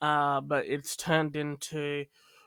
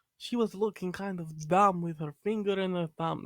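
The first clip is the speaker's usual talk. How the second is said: put-on Russian accent; 3 semitones higher than usual. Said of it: "This is more like Russian".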